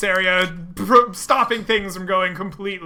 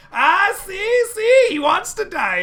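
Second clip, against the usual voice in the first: very high, slow, mocking, jeering tone; 13 semitones higher, 3 dB louder than usual. Narrating a fight, the speaker voices a foe jeering at his friends. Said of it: "jeers at his friends".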